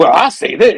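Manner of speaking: high-pitched put-on character voice, grumbling. Reading a comic aloud, voicing Jonah looking at the proof: Jonah voice. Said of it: "I do a Jonah voice".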